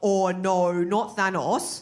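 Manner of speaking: put-on broad, laid-on Australian accent, very slow. Imagining a film star's line with the Australian accent: Chris Hemsworth as Thor in thick Australian accent. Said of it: "Could you imagine Chris Hemsworth as Thor? ... doing the Australian accent".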